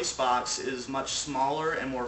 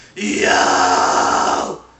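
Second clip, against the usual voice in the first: very loud, slightly grungy, lightly distorted voice; 7 semitones lower, 15 dB louder than usual. Teaching vocal distortion, going from clean to more grunge. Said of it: "from clean to just add more grunge".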